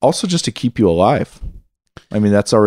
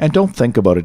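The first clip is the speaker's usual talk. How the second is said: ordinary talk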